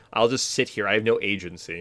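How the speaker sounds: ordinary talk, nothing marked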